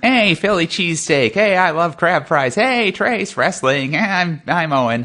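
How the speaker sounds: high, very slow character voice. Doing an impression of Owen for the others: Owen impression. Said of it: "That's a really good impression".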